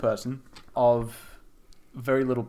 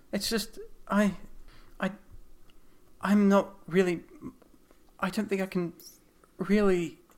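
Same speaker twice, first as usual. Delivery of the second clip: stammering, halting, faltering speech; 7 semitones higher, 5 dB quieter than usual. Voicing a character who struggles to get the words out: stammering. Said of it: "as she's trying to stammer out".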